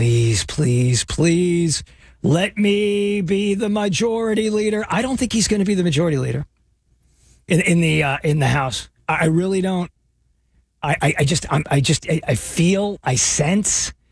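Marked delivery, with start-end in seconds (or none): 0.0-4.9 earnest, slow, drawn-out begging plea. Mocking a politician praying each night to become majority leader: imitating Hakeem Jeffries pleading. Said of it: "who goes to sleep every night and goes".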